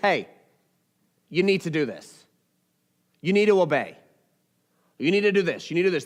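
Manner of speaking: firm, stern, no-nonsense commanding voice. Explaining Peter's commands to listeners, the speaker shows a commanding imperative tone. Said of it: "There's a, there's a tone here".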